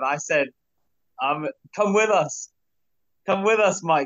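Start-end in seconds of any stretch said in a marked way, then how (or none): 1.7-4.1 loud yell, pitched high. Retelling calling out to a runner during a race: imitating own yell. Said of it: "But I yelled to him".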